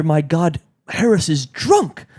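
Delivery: put-on old woman voice, calling out loudly. Retelling an old woman in the audience reacting when an actor trips: loud old woman voice. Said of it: "goes like loud for the whole audience to hear".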